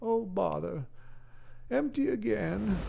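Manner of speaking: slow creaky cartoon bear voice. Explaining the love of Pooh meant the bear: Winnie the Pooh voice. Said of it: "that's a hard voice to do".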